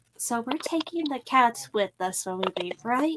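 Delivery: secretive, hushed, leaning-in half-whisper. Leaning in to ask the others about taking the cats: half-whispering. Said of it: "lean in and whisper".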